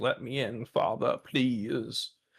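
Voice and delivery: put-on cat voice. Voicing the cat at the door: voicing the cat. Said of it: "My cat's at my door now being like".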